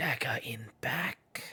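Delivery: soft mutter under the breath. Game master voicing a woman glancing at where Sol stands, saying it under her breath. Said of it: "kind of under her breath says".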